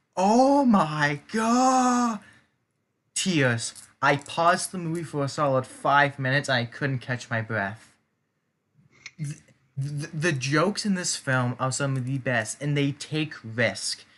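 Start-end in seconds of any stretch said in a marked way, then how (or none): 0.2-2.2 sudden high shout with God drawn out. Retelling a funny movie scene: imitating Thor shouting. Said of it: "Thor just shouts".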